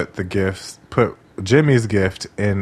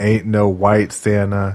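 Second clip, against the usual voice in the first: plain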